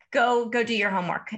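ordinary talk, nothing marked

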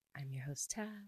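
very quiet, soft half-whisper. Introducing oneself as host of the podcast: half-whispering. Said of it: "I don't know why I just whispered that".

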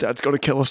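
put-on voice speaking in pain. Retelling getting up hurt after hitting a wall: imitating speaking in pain. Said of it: "like, in pain, going".

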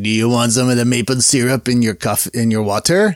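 put-on French Canadian accent. Retelling what a guy at a french canadian restaurant asked, in a put-on french canadian accent. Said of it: "throw out the French accent".

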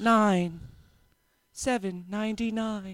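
automated machine voice. In a joking chat about accents, doing the Giant Eagle checkout voice. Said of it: "automatic checkout the woman phone".

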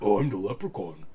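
dropped low like a dub. Telling a friend about the newest movie, doing the Leprechaun voice. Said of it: "you know how he did his voice? It's like".

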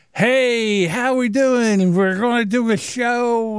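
put-on sloppy, tipsy, drunken slurring, slow. Retelling how Chad sounded plastered on his show: imitating drunk Chad slurring. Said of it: "he's slurring his words".

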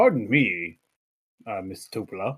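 put-on deep character voice. Voicing a huge-chinned character given a deep voice: put-on deep voice. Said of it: "And a deep voice".

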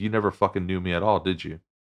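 half-hidden, mumbled, muttered half under the breath. Retelling what a homeless man says on his way out: imitating a mutter under the breath. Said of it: "half under his breath".

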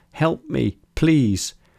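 high-pitched voice crying out in desperation. Cara, hurt, calls out with her mind to her beloved Mei, crying out desperately. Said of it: "she cried out with her mind, desperate to hear her voice".

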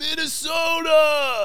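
very high-pitched, loud shout. Retelling a meme about Joe Biden: imitating Joe Biden saying Minnesota. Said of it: "the Joe Biden thing where he was just like".

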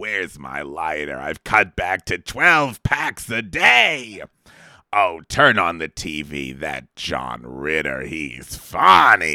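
very deep, gravelly, raspy voice. In a comedy bit about smoking, lines in a deep raspy Lucy voice. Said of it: "Lucy's voice dropped 40 octaves because of all of her smoking".

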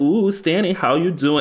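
very high, put-on cutesy voice. Retelling a character greeting a friend from a car: imitating a cutesy voice. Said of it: "she's trying to be so cutesy".

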